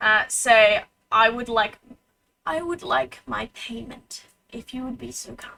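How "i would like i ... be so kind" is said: hushed, whispered inner voice. Voicing a voice heard inside a player's head: whispering voice. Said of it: "you hear a whispering voice in your head".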